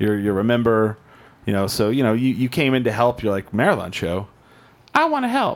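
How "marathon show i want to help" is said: squeaky put-on voice. Imitating a guest who came to help with the marathon show: squeaky voice imitating Chase. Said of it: "With the squeaky voice and everything".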